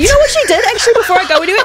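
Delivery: funny way of saying hey, high and fast. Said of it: "'Cause the way that you said that".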